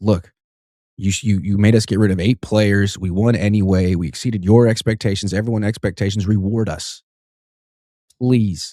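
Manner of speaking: normal talking voice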